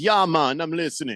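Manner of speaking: put-on Jamaican accent, Caribbean-style. Reading out a listener's message from Jamaica, in a Jamaican accent. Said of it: "the Caribbean accents all sound like".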